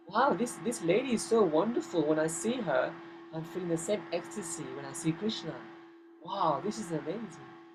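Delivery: ordinary talk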